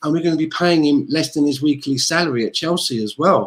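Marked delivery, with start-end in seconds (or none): none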